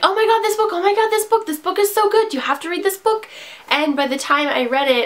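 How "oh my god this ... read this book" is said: play-acted, high, rattled-off excited yelling and gushing. Retelling how everyone pushed a hyped book: imitating people yelling excitedly. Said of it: "everyone was just yelling at me like".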